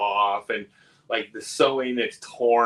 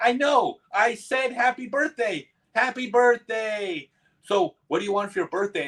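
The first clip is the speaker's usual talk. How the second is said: high-pitched sock puppet character voice; 11 semitones higher than usual. Retelling a puppet show where the puppet answers a kid: imitating a sock puppet. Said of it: "the puppet turns towards the kid and goes".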